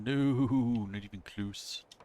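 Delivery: very slow, loud horse-like voice, "not" drawn out. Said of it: "I sounded like Mister Ed there for a second".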